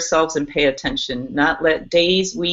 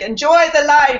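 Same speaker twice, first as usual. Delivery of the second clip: mock Spanish accent, screaming; 11 semitones higher, 5 dB louder than usual. Retelling a friend of a friend screaming goodbye: imitating a spanish accent, screaming. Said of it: "he has his Spanish accent, and he's screaming goodbye".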